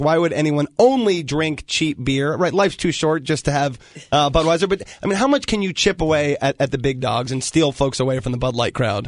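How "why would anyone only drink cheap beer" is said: plain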